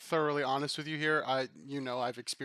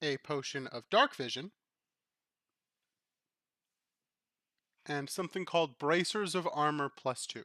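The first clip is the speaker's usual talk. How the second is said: slow-paced speech. Listing the items found in the box for the players: talking slowly. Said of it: "I'm gonna talk slowly".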